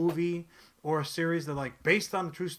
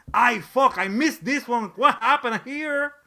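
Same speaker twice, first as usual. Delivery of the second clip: put-on very loud, high-pitched Mexican accent, blurted; 6 semitones higher, 8 dB louder than usual. Imagining what a director would say after seeing the episode: Guillermo del Toro's accent. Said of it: "that is what he'll say in that exact accent".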